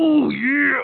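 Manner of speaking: loud yell.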